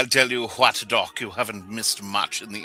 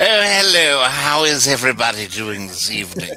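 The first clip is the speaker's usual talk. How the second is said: put-on sounding like old money; 5 dB louder than usual. Greeting everyone in character as Nigel Shillingsworth: sounding like old money. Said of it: "He sounds like he's old money".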